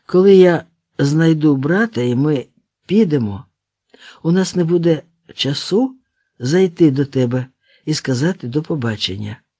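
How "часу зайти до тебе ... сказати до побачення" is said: plain reading voice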